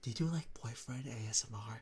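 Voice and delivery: quiet, soft, hushed confiding half-whisper. Retelling how someone in a coffee shop asked a question: imitating a soft-spoken half-whisper. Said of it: "she was, like, soft speaking".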